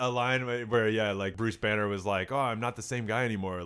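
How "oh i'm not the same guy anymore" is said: normal talking voice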